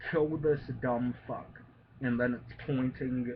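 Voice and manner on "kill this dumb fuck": ordinary delivery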